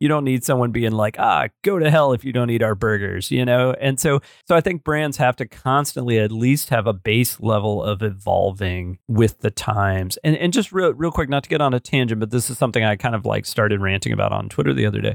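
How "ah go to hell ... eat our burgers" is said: imitated catty, snarky, sarcastic tone. Imitating a fast food chain being rude online: imitating a catty sarcastic tone. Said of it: "this kind of catty, sarcastic, biting voice".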